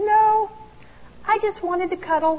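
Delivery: put-on sweet, tiny little-girl voice, very high-pitched. Retelling her answer when asked if she wanted the snack, imitating Claire's sweet little-girl voice. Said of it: "her sweet little girl voice".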